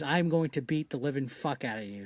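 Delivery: put-on dead-serious tone. Retelling a stunt man's threat if the fall goes wrong: imitating a dead-serious threat. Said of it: "the most serious fucking face ever".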